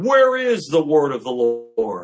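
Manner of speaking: loud, play-acted, scornful, jeering tone. Speaker teaching on Jeremiah 7, quoting people who taunted the prophet, in a mocking retold taunt. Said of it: "told Jeremiah mockingly".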